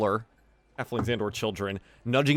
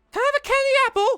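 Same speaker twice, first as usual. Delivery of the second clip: put-on very high small child's voice; 7 dB louder than usual. Voicing a masked little girl asking the players for a candy apple: little girl voice. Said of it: "probably a little girl".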